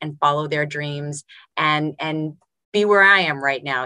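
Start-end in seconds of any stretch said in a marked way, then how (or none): none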